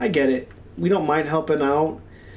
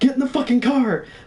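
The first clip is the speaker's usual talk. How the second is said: much higher panicked scream. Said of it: "I keep screaming at Mike".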